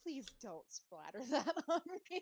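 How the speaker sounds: very loud, high, bubbling, excited giggles. Voicing a character who asks the group not to splatter goo: excited and giggly. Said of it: "you hear me get all excited and giggly".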